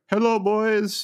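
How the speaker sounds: very high, cartoonish comic character voice. Retelling Liverpool's team Zoom call, acting out each person: imitating Xherdan Shaqiri. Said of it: "Nutty Professor style, like, one-man play".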